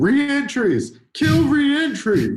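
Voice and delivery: mock very high, wild, swooping, loud shouted outburst. Answering what to change about poker, imitating Norman Chad yelling. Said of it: "head yelling".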